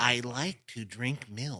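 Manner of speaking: slow, drawn-out cartoon voice. Retelling a clip where a learner is told to sound like SpongeBob: SpongeBob voice. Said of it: "they have him say it like SpongeBob".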